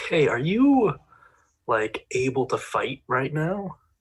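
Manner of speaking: quiet whisper. Speaking in character, asking an ally if he can fight: whispering. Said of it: "I'll whisper to Dukan".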